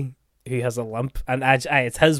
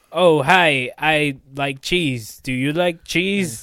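stiff, mechanical, robotic, jittery, nervous voice; 2 semitones higher, 4 dB louder than usual. Describing how all the people in it talk, the speaker mimics them, mock robotic and nervous. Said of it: "nearly kind of robotic and nearly like they're all just constantly nervous".

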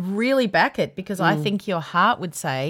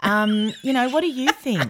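silly, slow, dumb-sounding put-on teenage girl voice; 4 semitones higher than usual. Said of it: "You started talking like a stupid".

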